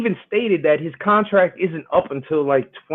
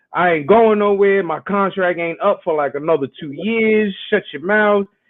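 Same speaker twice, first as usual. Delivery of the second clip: ordinary talk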